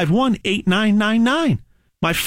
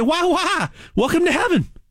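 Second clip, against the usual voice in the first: fake folksy Southern accent, pitched up; 8 semitones higher than usual. Joking about the Almighty welcoming someone to heaven: put-on Southern accent. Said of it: "He might have a Southern accent".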